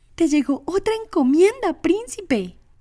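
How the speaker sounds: very high, thrilled, excited voice. The elder fairy hands the prince another box, excited exclamation. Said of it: "exclamó el hada mayor emocionada".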